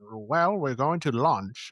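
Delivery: put-on nasal midwestern American accent. Describing how a man's accent sounds, quoting him; nasally Americana Midwestern accent. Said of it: "this kind of nasally like the Americana".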